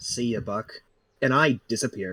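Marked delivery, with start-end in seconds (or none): 0.0-0.7 soft, dry, mocking, sarcastic tone. Voicing a character who salutes and leaves: sarcastic farewell. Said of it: "a small sarcastic salute".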